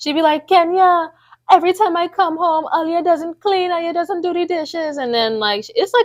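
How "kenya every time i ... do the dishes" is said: put-on Trinidad accent. Asked to show a Trinidadian accent, imitating mom's Trinidadian accent. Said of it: "I can imitate my mom".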